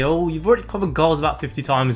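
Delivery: ordinary talk, nothing marked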